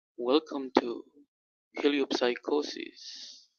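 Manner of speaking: put-on jazzy, mood-setting host delivery. Speaker listing voices he might use tonight, demonstrating a jazz mood voice. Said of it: "one of those jazz mood voices like".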